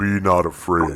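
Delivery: deep heavenly voice. Voicing a spirit calling to someone not to flee: deep angelic voice. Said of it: "This deep ass, angelic voice".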